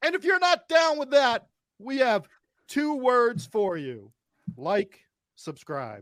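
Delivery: high, swooping ring announcer voice, sold hard. Doing a wrestling-style intro for the hosts: D-Generation X ring intro. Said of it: "Degeneration X at some point in the show".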